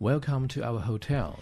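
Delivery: ordinary delivery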